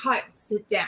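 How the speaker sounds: mock firm, very stern, no-nonsense tone. Retelling what a voice said from another room: imitating a stern voice. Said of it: "it was very stern the way".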